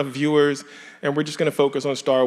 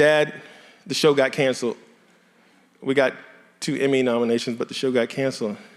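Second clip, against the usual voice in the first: usual speaking voice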